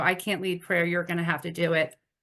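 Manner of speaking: tearful, crying speech. A woman retelling what she tearfully told her husband, retelling tearful words. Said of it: "I'm crying".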